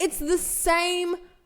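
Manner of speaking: loud, high-pitched, outright yell. Telling a story about catching the same bus again, the speaker starts yelling. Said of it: "Sorry, I'm yelling now".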